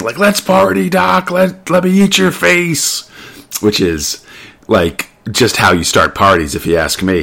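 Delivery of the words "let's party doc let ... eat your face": very high, creaky, raspy crab demon monster voice. Retelling a plot scene where the son turns demon: crab demon voice. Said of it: "goes full, like, crab demon".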